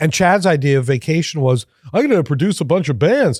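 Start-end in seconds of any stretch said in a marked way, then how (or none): 1.9-3.4 dim-witted, dopey put-on voice, pitched up. Retelling a friend's vacation plans, imitating Chad sounding dumb. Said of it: "I'm making him sound stupid".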